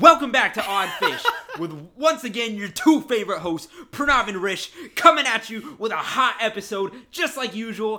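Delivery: ear-blasting, very loud, pumped-up, hyped-up announcer voice. Redoing the podcast intro after the co-host calls it unenthusiastic; very loud. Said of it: "sorry for blowing out your ears".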